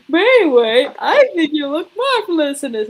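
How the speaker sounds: sudden loud, high, swooping, sing-song theatrical burst. Imitating Ayame switching suddenly from calm: over-the-top Ayame voice. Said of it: "all of a sudden".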